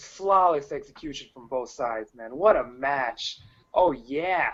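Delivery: heavy, laid-on sarcasm, insincere. Reacting to a wrestling match the other speaker disliked: sarcastic. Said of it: "I was being sarcastic".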